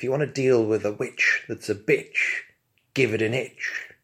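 ordinary talk

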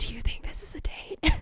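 hushed whisper. In the movie theater, speaker retells what they asked the other person: whispering. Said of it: "I have to whisper to them".

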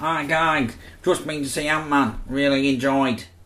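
put-on casual, everyday Mancunian accent. Podcast host reads a short film review as Lee Wood, Mancunian accent. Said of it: "do it like a Mancunian man".

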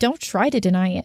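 ordinary delivery, nothing marked

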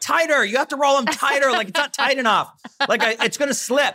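very high-pitched, shrieking, screamed demands. Retelling yelling at mom to roll jeans tighter: imitating own past screaming. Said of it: "screaming at my mom".

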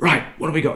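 loud voice. Retelling a man blasting in through the theatre doors: retelling a loud shout. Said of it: "a loud voice saying".

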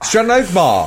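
mock, firm, totally confident delivery. Repeating another speaker's line back to them: imitating saying it with conviction. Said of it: "You were like Georgian Belfort there. You went".

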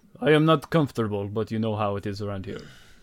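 worn-out, tired giant voice. Voicing a tired Goliath prisoner waking in a cage: voicing a tired Goliath. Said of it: "he says".

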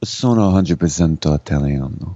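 low, husky, growly voice. Imitating the way she said the line: low husky voice. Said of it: "It was a husky way. It was like yeah. a low. It was a little grr in the voice".

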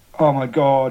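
mock panicked cry, panicking man voice. Retelling a man told the coffee shop toilet is out of order: imitating a panicking man. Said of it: "he's in full panic mode right now".

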